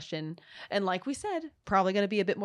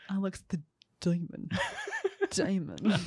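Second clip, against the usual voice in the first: animated cartoon voice with swooping pitch. Announcing quiz round results, speaker says a name in Big Mouth character voice. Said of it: "trying to do the voice of that person from Big Mouth".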